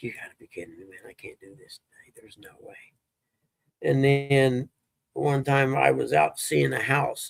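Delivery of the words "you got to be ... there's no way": hushed, very soft, very quiet tearful crying. Retelling a moment of despair early one morning: retelling crying. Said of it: "literally cried".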